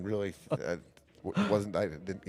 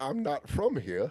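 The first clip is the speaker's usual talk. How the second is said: bad, pitched-up, fake put-on British accent; 7 semitones higher than usual. Retelling how a man answered a British lady asking directions, in a bad British accent. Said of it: "he answered in a bad British accent".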